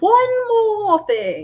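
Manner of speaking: very high, swooping, swinging-pitch cartoon voice. Asking for two seconds to add something: Uncle from Jackie Chan Adventures voice. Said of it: "I was doing Uncle from Jackie Chan Adventures".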